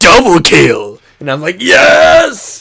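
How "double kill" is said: hyped game announcer call, pure adrenaline. Gamer describes the Halo announcer calling a double kill: hyped Halo announcer. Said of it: "sounds like the guy is like high on speed".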